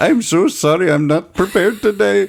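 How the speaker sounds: put-on Middle Eastern accent, pitched very high. Retelling a cab ride, quoting the cabbie in a Middle Eastern accent. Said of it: "I'll do this in my best Middle Eastern accent".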